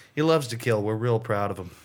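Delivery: bone-dry, flat deadpan delivery. Retelling what a coworker said to a camera crew, imitating a deadpan delivery. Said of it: "he looked real deadpan in the camera and goes".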